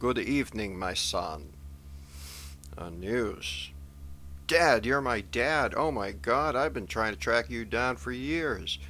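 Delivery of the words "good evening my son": poorly done, put-on German accent. The Pope returns a news presenter's greeting, in a dreadful German accent as Pope Benedict. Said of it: "using a dreadful German accent for His Holiness' voice".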